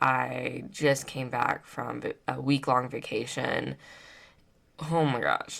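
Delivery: soft, creaky, very tired, worn-out voice. Back from a week-long vacation, a podcaster tells listeners: very tired. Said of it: "I think you guys can probably hear I sound very, very tired".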